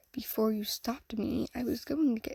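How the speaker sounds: ordinary delivery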